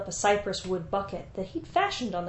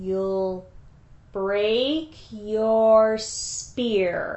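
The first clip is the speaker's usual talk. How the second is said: very slow, each word stretched out; 4 dB louder than usual. Narrating Lugalbanda repeating Enmerkar's words back to him; very slowly. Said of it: "said Lugalbanda, very slowly".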